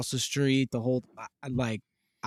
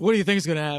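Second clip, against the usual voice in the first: put-on gruff tv dad voice; 3 semitones higher than usual. Quoting a favorite TV dad's catchphrase: Red Foreman impression. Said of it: "He's like".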